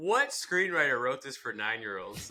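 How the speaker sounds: normal talking voice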